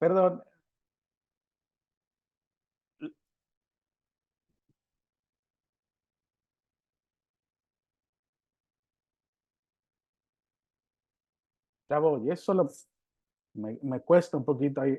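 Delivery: slow, drawn-out, crying through the words. Preaching and pausing to recover, crying while talking. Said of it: "esto estoy llorando".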